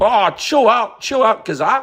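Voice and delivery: put-on New Zealand accent. Voicing new zealand telling gaza to calm down: put-on new zealand accent. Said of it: "I don't know how to do it in that accent".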